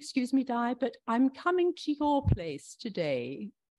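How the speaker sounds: bad, put-on posh British accent attempt. Imagining the Queen stepping out of her car into a crowd, bad British accent as the Queen. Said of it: "can't do a British accent".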